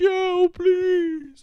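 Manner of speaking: blubbering, whiny crying, very high and loud. Retelling a wrestling segment, imitating Adam Cole begging Joe: mock crying Adam Cole plea. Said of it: "looking like a crying little bitch".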